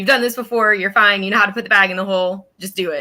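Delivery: ordinary delivery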